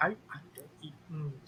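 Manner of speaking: near-silent tearful mouthing. Voicing a shaken character with tears welling up: mouthing very quietly, tearful. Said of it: "is mouthing just very quietly".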